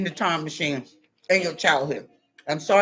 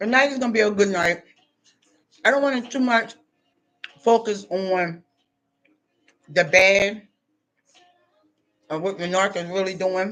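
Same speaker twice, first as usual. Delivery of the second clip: speaking with food in mouth, chewing. Addressing viewers while eating, talking with food in mouth. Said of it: "excuse me for talking with food in my mouth".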